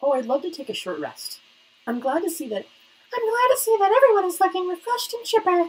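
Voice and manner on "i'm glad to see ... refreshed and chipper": very high put-on girl's head voice. Voicing a game character's lines during play, girl voice in head voice. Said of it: "My girl voice needs some work. Speaking in head voice".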